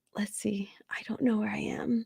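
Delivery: soft whispering, as if to oneself.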